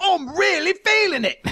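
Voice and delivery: put-on very high, heavy, thick Cockney accent. Retelling a pumped-up man's words, pronounced cockney accent. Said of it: "a very pronounced, like, Cockney kind of accent".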